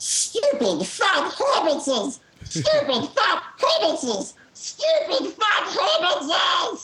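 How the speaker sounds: very high, slow, drawn-out creature voice. Showing the line used to learn a Smeagol voice. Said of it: "I learned how to do Smeagol by saying".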